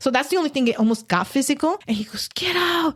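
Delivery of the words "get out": put-on scream, higher. Retelling a possessed man yelling at her mom: imitating someone screaming. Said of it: "he was just screaming at her".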